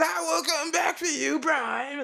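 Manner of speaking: very high-pitched, menacing villain voice. Quoting the villain's line after praising the old Megatron voice: old Megatron voice. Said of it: "I like the old Megatron voice too".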